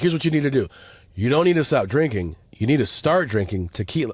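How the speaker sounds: boasting, proud, self-assured tone. Retelling Bert's tequila advice, imitating Bert sounding proud. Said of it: "he's really proud of this".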